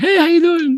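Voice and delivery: suddenly very high, fake put-on voice. Joking about suddenly switching to a different voice: put-on high-pitched voice. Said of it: "my voice gets all high".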